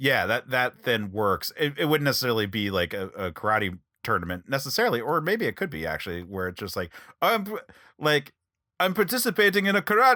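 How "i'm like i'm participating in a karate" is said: clumsy, bad French accent, pitched very high. Acting out a karate scene in a planned story: attempted French accent. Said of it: "I'm trying to do a French accent here".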